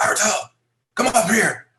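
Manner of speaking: shrill, very high, loud yell. Retelling how someone yelled from above just before a trick: imitating someone yelling. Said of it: "he just yells at me".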